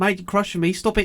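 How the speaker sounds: high, loud little cartoon character voice. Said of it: "the cartoon face going".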